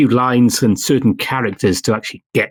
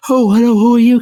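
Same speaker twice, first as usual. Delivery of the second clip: very high put-on stock female-character voice; 11 semitones higher, 5 dB louder than usual. Showing the bog-standard voice used for female characters, put-on high-pitched voice. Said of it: "Kind of high pitched voice as best I can do".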